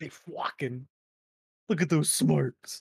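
dopey jock bro voice. Joking with friends: Chad voice. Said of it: "Why am I doing Chad voices?".

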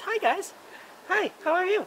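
made-up, very high, silly funny voice. Offering to be a participant, greeting everyone in a put-on funny voice. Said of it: "I could even talk in a funny voice like this".

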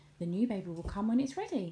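ordinary talk

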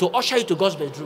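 ordinary talk, nothing marked

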